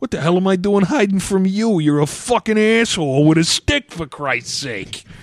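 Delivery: exaggerated put-on Jersey accent. Reading comic-book dialogue aloud, in an exaggerated put-on accent. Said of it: "I boiled down Mark Millar's writing style into an accent".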